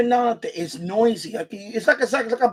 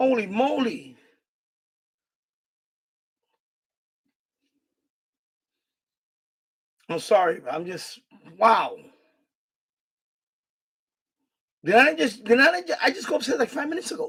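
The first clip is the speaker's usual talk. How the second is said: worked up and agitated, calming down. Returning to the basement after telling the son upstairs to stop: worked up, calming down. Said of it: "I'm calming down, people".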